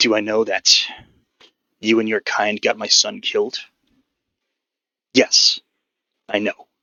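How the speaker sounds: angry, barely held back. Voicing a character confronting a player, angry and barely holding back. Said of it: "very angry right now".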